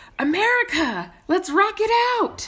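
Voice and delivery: put-on very high, shrill, drawn-out kid yell. Retelling how a five-year-old suddenly yelled from the back seat: imitating a child yelling. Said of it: "our five-year-old yells".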